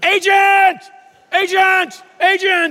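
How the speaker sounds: high, shrill yelling at full volume. Retelling calling for an agent at packed LAX with little time, retelling a top-of-lungs yell. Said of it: "I yelled at the top of my lungs".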